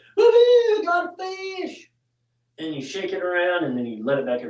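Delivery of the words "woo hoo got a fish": very high, drawn-out hooting and hollering whoop. Showing what you do after catching a fish: acting out hooting and hollering. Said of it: "hoot and holler".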